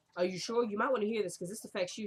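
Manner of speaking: ordinary talk, nothing marked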